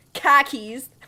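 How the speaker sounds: very loud Boston accent, broad vowels on khakis. Joking that car keys sounds like khakis, said in a Boston accent. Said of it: "Sounds like you're saying khakis in a Boston accent".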